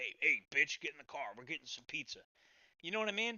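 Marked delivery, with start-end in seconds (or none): 0.0-2.2 bossy, assertive tough-guy gangster voice. Showing how a gangster tells his girlfriend to get in the car: imitating an assertive gangster. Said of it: "It's assertive".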